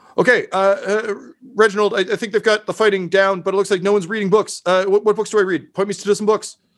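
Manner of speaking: very high, rushed, hollered yell. Voicing a character who rushes into a fight, yelling into the void. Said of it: "he just yells kind of into the void".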